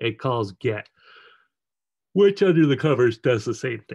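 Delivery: speaking through a yawn. Explaining code step by step, the speaker yawns while talking. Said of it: "Excuse me for yawning there".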